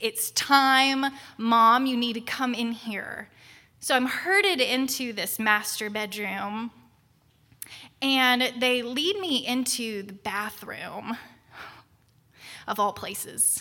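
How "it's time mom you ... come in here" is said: ordinary talk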